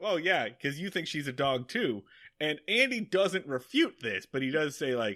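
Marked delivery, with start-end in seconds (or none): none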